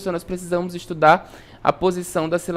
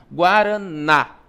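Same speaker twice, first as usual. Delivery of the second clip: Guaraná with ná hit hardest. Explaining Portuguese word stress, say Guaraná with stress on last syllable ná. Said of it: "O na, ele é pronunciado com mais força".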